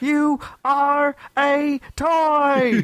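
very high, slow yell, toy drawn out. Imitating how an actor sounds when he yells in a movie: imitating Woody yelling. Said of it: "that's what it sounds like".

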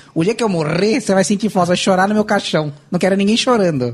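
scolding, guilt-tripping tone. Retelling what every mother says when a child is disrespectful: imitating a mother. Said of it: "ela fala assim".

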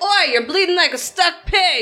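taunting, jeering voice. Casting a mocking spell in character, taunting a bleeding thug: mocking taunt. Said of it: "do Vicious Mockery".

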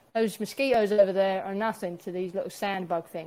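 normal talking voice

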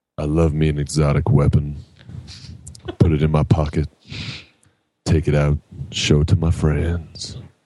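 low, seductive, sexy put-on bedroom voice. Asked by another speaker to do the sexy voice, in a sexy voice. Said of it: "Say the word exotic in the sexy voice".

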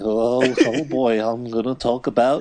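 acted, really nervous voice drawn out very slowly. Speaker imagines a podcast host called Leroy talking: mock-nervous Leroy voice. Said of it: "like really nervous".

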